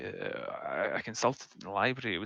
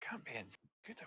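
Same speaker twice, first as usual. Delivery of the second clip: hushed, very soft half-whisper; 4 semitones higher, 16 dB quieter than usual. Answering in character about what it means: half-whispering in character. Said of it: "if you whisper, we actually can't hear you".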